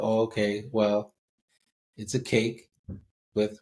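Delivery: dry, mocking, sarcastic tone. Retelling an online answer to what a crab cake is: imitating a sarcastic answer. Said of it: "someone answered sarcastically".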